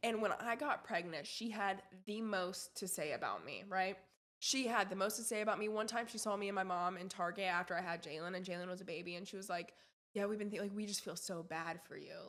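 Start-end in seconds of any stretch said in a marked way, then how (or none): 10.1-12.1 patronizing, condescending, put-on sympathy and fake pity. Retelling what a church friend's mother said in Target: imitating a condescending tone. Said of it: "just being really condescending".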